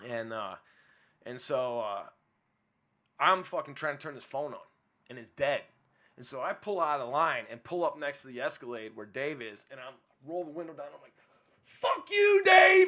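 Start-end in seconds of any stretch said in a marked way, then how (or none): 11.7-12.9 shrill, very loud, high-pitched, all-out scream. Telling of pulling up beside another car with the window down, retelling a scream. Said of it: "I'm screaming".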